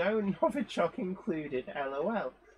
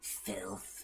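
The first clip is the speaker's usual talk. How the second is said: hushed, whispered special put-on voice; 11 semitones lower, 13 dB quieter than usual. Reading out a viewer's comment that asks for a special voice: special put-on voice. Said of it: "I feel that I need to put a special vo-, um, special voice on for this".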